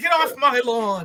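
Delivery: put-on very high, shrill shout. Retelling how someone turned back to people and shouted, retelling a shout. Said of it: "and shouted".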